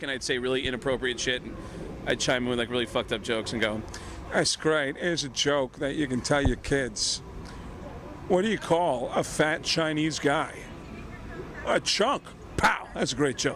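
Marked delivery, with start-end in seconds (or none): 4.3-13.6 slow, unhurried delivery, letting each line land. Recalling chiming in with jokes in character, Christopher Walken impression. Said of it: "as Christopher Walken".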